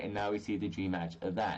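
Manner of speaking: ordinary talk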